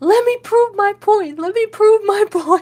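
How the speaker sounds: shrill, very high screaming at top volume. Retelling how MJF was pulled off Hangman: imitating MJF screaming. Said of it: "he starts screaming, he goes".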